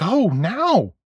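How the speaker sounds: high, frantic, pushing tone. A woman urges another woman to leave and check on someone, frantic. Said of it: "Miss Crane said in her frantic voice".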